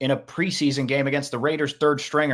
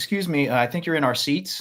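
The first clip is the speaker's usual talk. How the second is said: put-on calm voice. Retelling a theater scene with Ross, imitating Ben Stiller, mock-calm. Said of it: "very calm".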